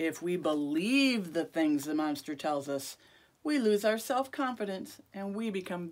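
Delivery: plain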